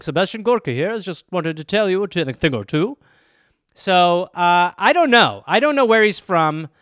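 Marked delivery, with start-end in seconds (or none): 0.0-3.0 put-on English accent. Doing a Sebastian Gorka impression that sounds English. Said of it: "Is he English?".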